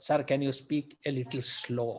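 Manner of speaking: ordinary talk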